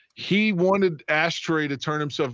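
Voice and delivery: plain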